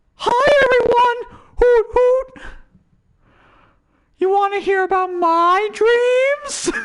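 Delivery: very high, squeaky cartoon owl voice, a bit loud. While plugging your YouTube, slip into a Hootie from Owl House voice and greet everyone. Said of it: "it's Hootie from Owl House".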